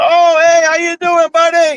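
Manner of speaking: very high, overly chummy, phony-friendly fake cheer. Retelling how officials greeted him when he went in: imitating a fake-friendly greeting. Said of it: "he's pretending like the guy is, like, you know, likes me".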